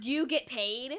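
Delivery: screaming. Speaking in character to an enemy holding a halfling hostage: screaming. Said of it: "I wanna scream at him".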